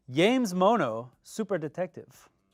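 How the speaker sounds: slow Spanish accent. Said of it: "I'll just try to say it in a, in a Spanish accent".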